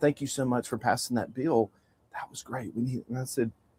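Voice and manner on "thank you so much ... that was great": hushed, very quiet half-whisper, close to the ear. Recounting what a woman half-whispered in their ear after the bill passed, retelling a half-whisper. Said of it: "whispered in my ear".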